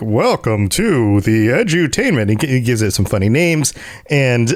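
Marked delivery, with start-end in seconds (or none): 0.0-2.4 played-up, slow, official-sounding put-on voice. Describing how a goofy guy plays things up, speaker mimics him: imitating Mort's official voice. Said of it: "he puts on this like official voice".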